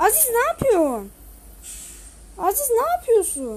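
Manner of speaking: annoyed, irritated, swooping exasperated voice. During a game, calling out a fellow player, irritated at teammate. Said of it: "Aziz'e sinir oldum ya".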